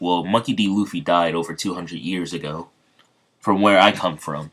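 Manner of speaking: ordinary delivery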